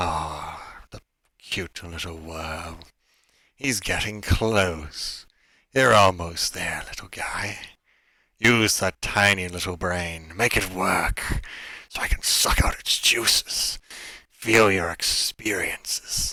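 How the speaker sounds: slow voice with an echo. Storyteller voices a tentacled creature speaking into your mind, echoing telepathic voice. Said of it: "You hear the voice echo through your mind".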